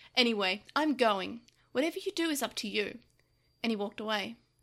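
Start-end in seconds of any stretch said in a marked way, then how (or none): 0.2-3.0 sharp, cutting tone with an edge. Narrator reads Yamato leaving a confused Gabumon behind, said sharply. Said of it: "he said sharply".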